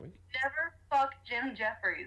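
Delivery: very slow delivery. Saying a requested denial while being recorded, sounding like a warning. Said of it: "That sounded more like a warning".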